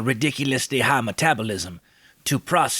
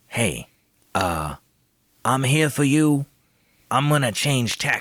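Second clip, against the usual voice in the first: quiet, subtle whisper. Playing a character leaning over to a companion: whispering subtly. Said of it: "whisper subtly into his ear and say".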